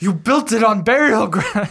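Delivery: high, urgent, shouty, accusing half-yell. Recounting a horror film scene, the speaker quotes a character: retelling a yell. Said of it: "he was like yelling".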